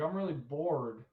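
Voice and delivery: plain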